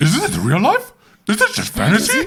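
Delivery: high, swooping, sing-song cartoon dog voice. Switching into Scooby-Doo mode for a line, in Scooby-Doo voice. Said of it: "Just go into Scooby-Doo mode".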